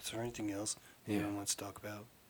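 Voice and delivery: mock disappointed tone. Imitating another speaker's question: imitating a disappointed question. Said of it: "You sound so disappointed".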